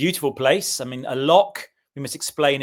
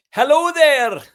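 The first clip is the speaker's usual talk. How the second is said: very high, loud put-on Scottish accent; 14 semitones higher, 8 dB louder than usual. A podcast guest greets the host, trying a Scottish accent. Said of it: "I'm just trying my Scottish accent".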